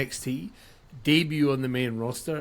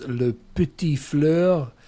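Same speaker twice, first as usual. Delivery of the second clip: best attempt at a put-on French accent; 4 dB louder than usual. On a podcast, giving someone's nickname of the week in a put-on french accent. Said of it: "in my best French accent".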